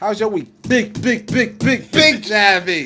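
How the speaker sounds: high-pitched, loud, long drawn-out words.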